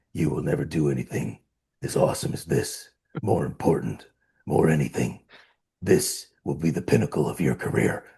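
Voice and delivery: near-whisper, heavy with breath. Recalling the speech Eddie gave the cast in his trailer, doing an Edward James Olmos impression. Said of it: "impression, by the way, of Edward James Olmos".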